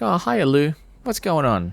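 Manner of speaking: very high, swooping, friendly chirp. Retelling a film scene, quoting the character at the crime scene: imitating Marge, nice and chatty. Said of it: "nice, sort of chatty".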